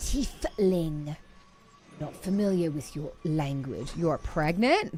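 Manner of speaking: low, slow impression voice.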